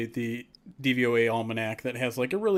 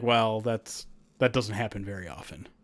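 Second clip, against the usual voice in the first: mock dismissive scoffing, brushing it off; 3 semitones lower than usual. Retelling how he reacted to the receiver prediction: imitating a scoff. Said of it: "he kind of scoffed at it as".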